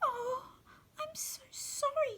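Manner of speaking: tiny, very high, soft voice. After eating all the stable boy's lunch, the king answers him in a tiny voice. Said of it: "said the king in a tiny voice".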